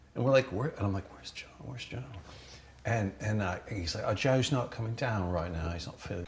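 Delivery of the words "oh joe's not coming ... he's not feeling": casual, relaxed, put-on English accent. Retelling what the english bartender told them, in an english accent. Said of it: "Great accent".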